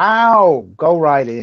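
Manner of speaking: put-on heavy, broad New York accent, swooping. In a role-play, a character answers a visitor in a broad new york accent. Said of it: "in a broad New York accent".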